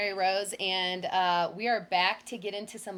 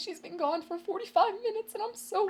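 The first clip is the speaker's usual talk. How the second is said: put-on near-crying voice, cracking, much higher pitch; 12 semitones higher than usual. Retelling what a worried man told the police at the door, imitating him almost crying. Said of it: "his little voice cracked up".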